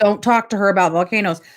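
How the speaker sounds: ordinary delivery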